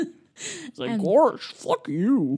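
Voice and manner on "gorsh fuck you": loud, high-pitched cartoon dog voice. Imagining a very different movie where Goofy curses, Goofy voice. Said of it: "Goofy voice".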